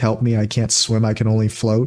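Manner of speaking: ordinary talk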